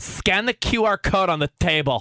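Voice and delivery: play-acted curt, rude, very slow delivery. Retelling asking for a menu at a restaurant, imitating a rude voice. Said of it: "in like a rude voice".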